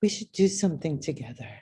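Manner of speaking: soft, confiding, hushed stage whisper. Retelling how a photographer came up behind and spoke: retelling a half-whisper. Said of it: "whispers in my ear".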